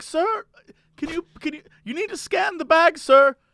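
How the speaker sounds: put-on German accent in an older lady voice. Retelling what a store worker said to a customer: imitating a german accent. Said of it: "sort of has a German accent".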